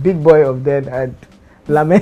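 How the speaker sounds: loud, words bubbling through laughter. Commenting on a governor's past bragging to viewers, laughing while talking. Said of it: "I'm sorry I'm laughing".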